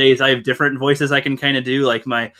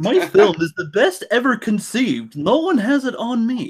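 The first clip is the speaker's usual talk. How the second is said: very high, sing-song, swooping, very proper voice; 9 semitones higher than usual. Reading out tweets in a voice, as a co-host suggested: too-proper Rian Johnson impression. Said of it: "now that sounds too proper".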